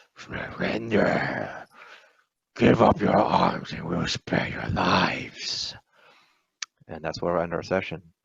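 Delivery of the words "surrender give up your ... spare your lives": slow, thick, sludgy, rough demonic rumbling voice. Narrating a game session, voicing a distant figure ending the round, in a rumbling sludge-like voice. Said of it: "a sludge-like voice that finishes the round by saying".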